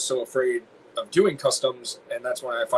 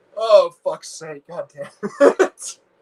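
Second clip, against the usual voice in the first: high, loud laughing, crying with laughter; 6 semitones higher, 7 dB louder than usual. Reacting to their own silly crossover joke, laughing to tears. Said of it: "I'm crying".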